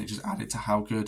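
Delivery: voice cracking. Reviewing favorite DLCs of the year, voice cracking. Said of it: "that was a voice crack".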